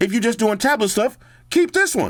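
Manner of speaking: shifts into a high, swooping voice. Giving tablet upgrade advice to viewers, slipping into a high-pitched voice. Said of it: "Why did I go to the high voice?".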